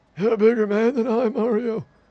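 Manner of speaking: put-on, very high-pitched elderly old man voice. Streamer playing a game voices a character speaking to Mario, old man voice. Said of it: "the old man voice".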